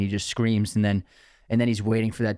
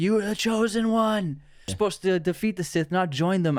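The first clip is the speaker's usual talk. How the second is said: mock very high, raw, pained anguished scream; 9 semitones higher than usual. Describing a favorite film scene, re-enacting Obi-Wan screaming at Anakin. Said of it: "he's like screaming at Anakin like".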